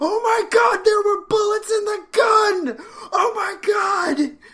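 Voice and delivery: high, loud shriek of genuine horror. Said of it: "share extremely genuine horror".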